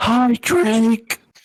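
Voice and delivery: high-pitched, loud stage whisper. Greeting someone who seems to be creeping around, whisper-yelling. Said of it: "whisper yelling".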